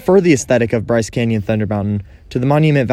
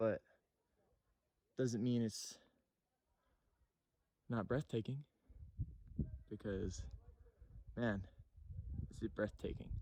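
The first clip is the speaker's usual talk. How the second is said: out of breath, much quieter; 29 dB quieter than usual. Visiting Rainbow Ridge in Bryce Canyon, out of breath. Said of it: "i'm out of breath".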